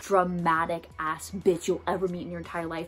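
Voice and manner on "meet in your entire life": ordinary talk, nothing marked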